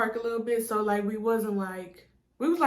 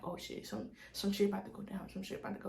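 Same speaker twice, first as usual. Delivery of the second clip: put-on muttered whisper under the breath, quieter; 12 dB quieter than usual. Retelling seeing someone on the corner: muttering under breath. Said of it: "I kept saying that under my breath".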